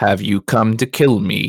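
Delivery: soft but carrying voice. Game master voicing a stranger calling out from forty feet away, quiet voice that carries. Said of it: "Their voice is quiet".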